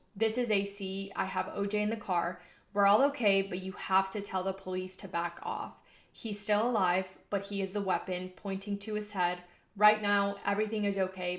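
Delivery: ordinary delivery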